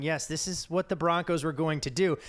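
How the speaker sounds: plain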